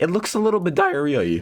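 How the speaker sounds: sudden squeaky voice crack, very high. Cook spooning sauce over a dish for viewers, voice cracking. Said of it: "sorry for the voice crack over there".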